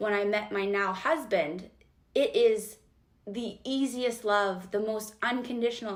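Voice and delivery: choked-up voice, catching with feeling. Describing meeting a now husband and the easiest love: getting emotional. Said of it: "I'm gonna get emotional".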